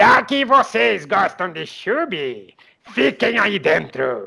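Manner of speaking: rough, creaky, croaked villain voice. Speaker retells what Sepulcrávio told the Chube followers: Sepulcrávio villain voice. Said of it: "Ele falou desse jeito, com essa voz".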